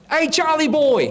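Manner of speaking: high, slow calling out. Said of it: "she yells out".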